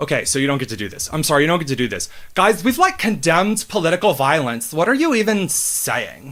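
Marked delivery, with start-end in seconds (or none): 2.4-6.3 put-on swooping valley girl teenage girl accent. Mocking a press secretary's words in a stereotyped teenage girl accent. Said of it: "the stupid girl, teenage girl accent stereotype".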